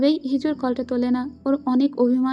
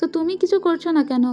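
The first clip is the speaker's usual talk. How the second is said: ordinary delivery, nothing marked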